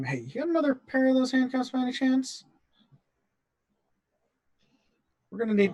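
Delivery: hushed whispering. Quietly asking a companion for another pair of handcuffs, whispering. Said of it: "just kind of whisper to him".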